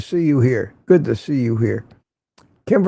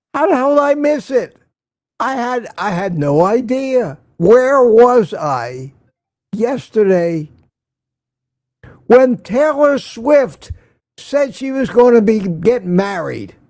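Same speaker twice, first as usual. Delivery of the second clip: higher-pitched, sarcastic mock outrage and disbelief. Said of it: "I'm being sarcastic".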